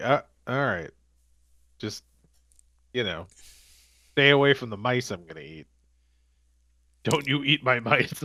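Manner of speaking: grumpy, surly owl voice. Acting out a territorial owl in its forest: surly owl voice. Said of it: "a surly owl person".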